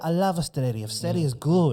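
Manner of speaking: put-on South American accent on Australia. Speaker quotes their dad, a South American immigrant, imitating dad's immigrant accent. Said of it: "I have to put the accent on Australia because he's an immigrant".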